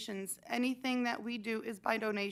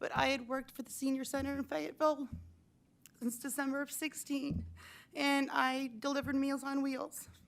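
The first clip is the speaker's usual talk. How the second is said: choked-up voice, on the verge of crying; 4 semitones higher than usual. The senior center director, describing their work history, speaks emotional, close to crying. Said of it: "I'm going to cry because this is a very emotional thing for me".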